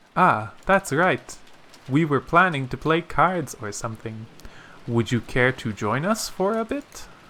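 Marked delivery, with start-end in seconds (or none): none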